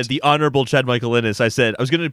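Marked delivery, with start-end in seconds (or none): none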